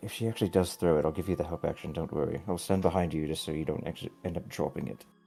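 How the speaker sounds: whispering under the breath. Playing a character turning to another character: whispering. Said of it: "I'm gonna whisper basically".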